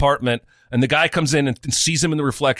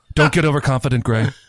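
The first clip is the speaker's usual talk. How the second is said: put-on AI chip voice; 2 semitones lower than usual. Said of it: "Spock from the J J Abrams movies doing the voice of Stem".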